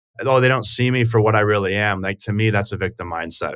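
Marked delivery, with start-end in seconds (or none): none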